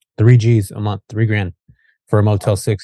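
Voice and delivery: normal talking voice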